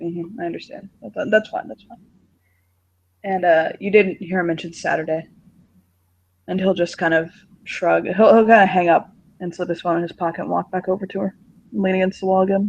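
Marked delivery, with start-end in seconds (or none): 0.0-2.0 gentle, very soft, hushed murmur. Voicing a character quietly answering a phone call: very soft voice. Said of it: "very soft".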